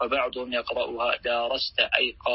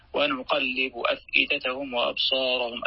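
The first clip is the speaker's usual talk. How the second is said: usual speaking voice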